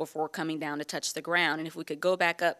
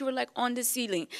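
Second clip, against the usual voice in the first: high, put-on Caribbean accent; 7 semitones higher than usual. Retelling what a woman said after watching the speaker's pole scenes: imitating a Caribbean accent. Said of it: "she came over to me in her Caribbean accent".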